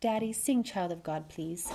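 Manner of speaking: ordinary delivery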